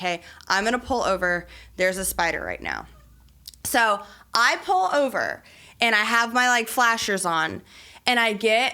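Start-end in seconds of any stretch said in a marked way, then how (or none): 0.0-2.9 put-on frantic panic with swooping pitch. Retelling a call to a best friend about a car spider: imitating own panic. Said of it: "I call her in, like, a panic".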